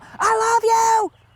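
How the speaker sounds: high, loud yell. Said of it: "just yell out the window".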